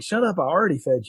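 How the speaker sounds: plain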